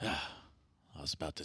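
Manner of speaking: muttering under his breath. Voicing the sheriff when agents show their paperwork: mumbling under his breath. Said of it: "he mumbles under his breath".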